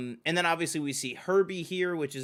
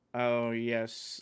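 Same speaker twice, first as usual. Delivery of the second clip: depressed, miserable robot voice; 3 semitones lower than usual. Describing a depressed movie robot, doing its voice like Alan Rickman. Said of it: "Alan Rickman's voice like that".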